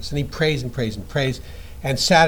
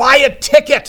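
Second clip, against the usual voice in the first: put-on very high, very loud exasperated cry; 12 semitones higher, 11 dB louder than usual. Telling a joke, a voice suddenly speaks to a man: mock-frustrated voice. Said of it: "a frustrated voice says".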